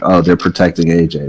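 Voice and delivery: ordinary talk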